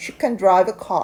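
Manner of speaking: "can" skimmed quickly, weight on "drive". English lesson reading a sentence with can: stress on drive, quick can. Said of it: "can은 빠르게 지나가고 뒤에 나와 있는 동사원형의 강세를 둔다".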